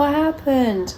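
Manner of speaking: tiny, sugary sweet voice, very high-pitched. Retelling a woman checking on her friend: imitating a little sweet voice. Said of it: "With her little sweet voice".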